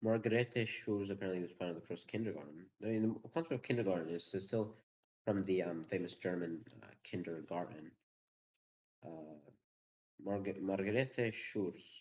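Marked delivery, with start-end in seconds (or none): 10.2-12.0 rough Spanish accent, much slower. Saying the name of the german kindergarten founder, in a sort of spanish accent. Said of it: "I'm saying it in like a sort of Spanish accent".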